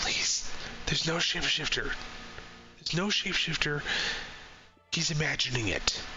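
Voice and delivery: faint, barely audible whisper under the breath. Voicing a tied-up character pleading with the players: barely audible whisper. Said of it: "he's whispering to you, just, like, barely".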